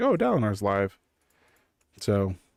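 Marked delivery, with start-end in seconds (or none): none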